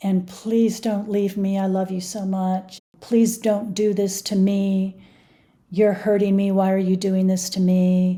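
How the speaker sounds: mock crying, whining, pleading voice. Retelling a voicemail Kenny left Tiffany, imitating Kenny crying and whining. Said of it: "he's crying and whining".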